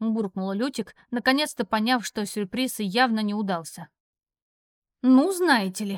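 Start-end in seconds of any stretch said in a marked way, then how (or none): 5.0-6.0 scornful, dismissive snort, slower. A narrator reads Yara turning to leave for the cabin, with a scornful snort. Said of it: "пренебрежительно фыркнув".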